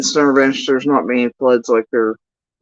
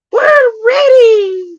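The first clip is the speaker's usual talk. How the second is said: very high-pitched cartoon character voice; 4 dB louder than usual. Answering a request to say if everyone is ready: SpongeBob voice. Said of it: "That was my best SpongeBob voice".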